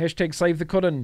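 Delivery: put-on Australian accent. Showing an old-school build, tossing off a hashtag in a put-on Aussie accent. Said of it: "I don't know why I have to say that in an Aussie accent".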